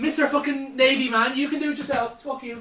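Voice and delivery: high, sulky, really passive aggressive. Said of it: "He's, like, really passive aggressive".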